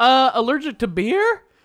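pitch going up at end. Turning a statement into a question for the other speaker, with rising question intonation. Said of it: "I made it sound like a question by going up at the end".

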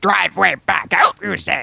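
put-on wise old alien sage voice. Asked to do Yoda giving directions, Yoda impression. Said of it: "Yoda giving directions".

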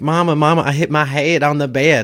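put-on strong, thick Texas accent. Quoting their own line to mama, thick texas accent. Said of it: "like in this big, thick Texas accent".

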